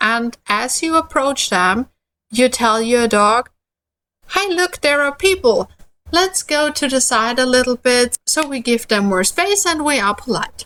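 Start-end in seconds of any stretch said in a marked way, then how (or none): 4.3-8.2 very friendly, sweet, playful tone, pitched up. Talking to your dog as you approach strangers in the park, very friendly, playful and sweet. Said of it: "in a very friendly, very playful and very sweet tone".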